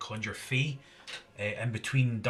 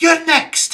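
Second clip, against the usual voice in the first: altered character voice, very high, shrill, very loud; 17 dB louder than usual. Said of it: "in my sort of shifted voice".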